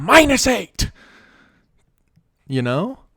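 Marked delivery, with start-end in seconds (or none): 0.0-0.9 high, loud yelling. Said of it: "When he's like".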